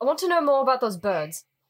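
attempted put-on English accent. Playing a character and trying the English accent again. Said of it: "I'm trying the English accent again".

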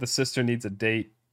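ordinary talk

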